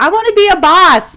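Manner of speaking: high, loud, belted-out proud tone.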